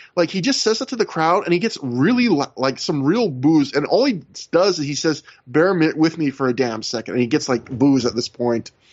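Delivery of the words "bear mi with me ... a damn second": ordinary talk, nothing marked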